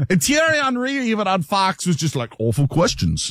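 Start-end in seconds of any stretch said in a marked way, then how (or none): 2.4-3.3 awful, laid-on put-on British accent. Speaker quotes Thierry Henry's reaction to an interviewer, in an awful British accent. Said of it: "that was an awful British accent".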